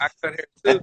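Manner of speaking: fast, friendly, rattled off with a laugh.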